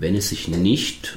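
nicht stressed and said slowly. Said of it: "ich betone nicht".

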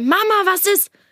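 play-acted shouting, pitched very high. Retelling calling out into the hallway: imitating own shout.

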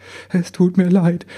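high, halting, stumbling stammering voice. The little elf apologizes while the big one wipes his tears, stammering. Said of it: "stammelte der Kleine".

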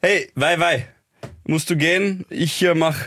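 bad put-on Egyptian accent. Challenged by the others to imitate an egyptian speaking german, in a bad fake egyptian accent. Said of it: "Probier's einmal".

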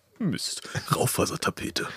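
breathy put-on cartoon character voice. Asked to do Bernd das Brot once more, a Bernd das Brot voice. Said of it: "Kannst du nochmal Bernd das Brot machen?".

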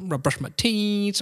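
snooty, superior-sounding, arrogant, haughty delivery. Imitating a woman's voice saying an English phrase: mock-arrogant voice. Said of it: "die hat schon so was Arrogantes irgendwie in der Stimme. Ne? So".

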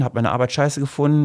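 ordinary talk

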